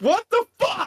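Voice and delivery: put-on angry man outburst. Retelling how a man with a flashlight got mad at a door: imitating a man getting mad. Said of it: "he's getting mad".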